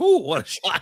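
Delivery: acted-out self-admiring tone. Retelling a character admiring his own shot: imitating admiring his own shot. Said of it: "he admired it himself".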